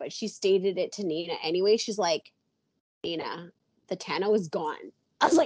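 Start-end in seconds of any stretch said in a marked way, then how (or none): none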